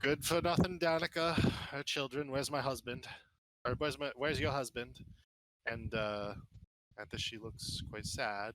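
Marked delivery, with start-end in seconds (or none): 0.0-5.0 short, gruff, brusque, curt, no-nonsense delivery. Voicing the vineyard owner greeting a woman: brusque voice. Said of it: "describes in his typical brusque voice".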